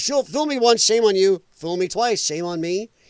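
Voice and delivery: normal talking voice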